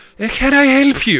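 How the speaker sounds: very high, cut-glass and refined voice. A game narrator voices the woman who runs the place greeting the players; cut-glass voice. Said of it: "a woman with a cut glass voice say".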